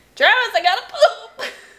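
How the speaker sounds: put-on excited, high, loud little-kid shout.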